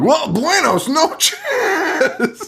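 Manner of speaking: mock very high, wildly sing-song, swooping shout. Retelling a movie scene where a snake is caught: imitating Jon Voight yelling. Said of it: "But he yells it in".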